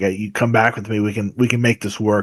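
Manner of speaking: ordinary talk, nothing marked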